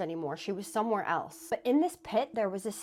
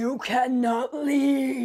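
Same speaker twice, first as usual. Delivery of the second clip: loud, extremely demonic yell; 4 semitones higher, 8 dB louder than usual. Telling a scary story, the speaker voices an old woman yelling in a demonic voice. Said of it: "She said it in the most demonic voice".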